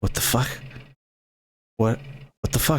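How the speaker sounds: bewildered, confused, breathy half-whisper. Narrator voices a character who looks at someone, confused. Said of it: "he looks at you like confused".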